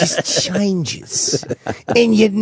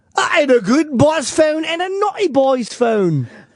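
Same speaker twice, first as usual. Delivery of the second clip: fake English accent, pitched up; 8 semitones higher than usual. Repeating a line about two phones for the others: put-on English accent. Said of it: "Jimmy's English accent".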